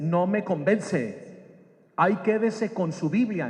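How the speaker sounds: ordinary talk, nothing marked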